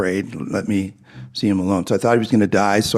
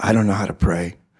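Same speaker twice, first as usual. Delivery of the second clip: put-on very gruff voice. Recounting a man's reply to you, imitating him in a very gruff voice. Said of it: "in a very gruff voice".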